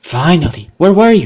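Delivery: angry, annoyed tone. Greeting a partner who went missing overnight, angry. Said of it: "Why are you so angry?".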